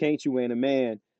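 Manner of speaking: normal talking voice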